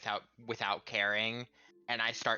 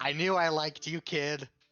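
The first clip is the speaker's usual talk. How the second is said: high yell, shouted across from a distance; 6 semitones higher, 5 dB louder than usual. Calling out to a watching character during painful surgery: yelling across to someone. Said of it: "I'm just gonna yell over".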